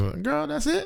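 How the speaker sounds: put-on high cheering girl voice.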